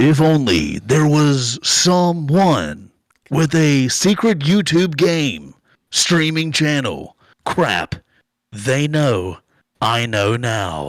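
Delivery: grand, very dramatic theatrical declamation. Announcing they will read a message aloud: very dramatic reading. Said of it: "I'm going to read this in a very dramatic way".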